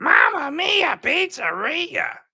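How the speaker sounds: very high, very slow character voice. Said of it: "I asked, "Can you do".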